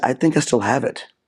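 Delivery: ordinary delivery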